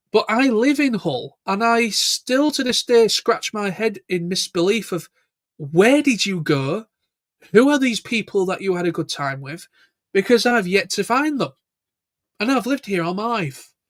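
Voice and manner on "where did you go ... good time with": mock-incredulous, swooping sarcastic disbelief. Asking visitors to Hull where they went and who they met: sarcastic. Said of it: "I'm being sarcastic".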